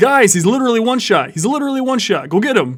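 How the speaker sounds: heated, very loud, high-pitched angry yelling. Testing the mic closer, getting mad at teammates: getting mad, a little louder. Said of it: "if I was getting mad at my teammates, getting a little bit louder".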